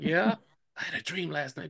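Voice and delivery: whispered speech. Retelling someone leaning in behind during a church service: imitating a whisper. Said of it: "you hear this whisper behind your head".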